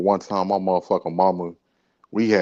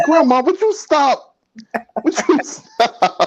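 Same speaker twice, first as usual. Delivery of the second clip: acted embarrassed protest, very high, slow, drawn-out; 6 dB louder than usual. Retelling answering grandma at the buffet: imitating own past protest. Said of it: "I'm like".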